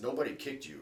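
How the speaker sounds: put-on heavy Russian accent, laid on thick. Speaker quoting a man's reply after a knee injury, thick Russian accent. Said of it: "in this thick Russian accent".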